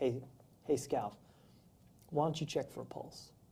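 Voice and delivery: very soft-spoken, quiet, calm voice. Retelling what the lieutenant said at a scene: imitating someone talking calmly. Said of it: "He talks real calmly".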